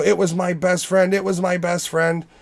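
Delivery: high, mild, acted-out half-scream. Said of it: "she's screaming".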